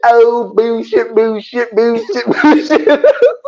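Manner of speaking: high, slow, drawn-out, laughing mocking scoff.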